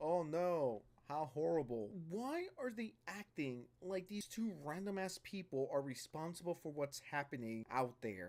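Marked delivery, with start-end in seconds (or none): 0.0-1.9 slow, dead-flat monotone drone. Mocking Hasan Piker's reaction to a museum shooting, in a monotone. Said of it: "In the most monotone voice imaginable".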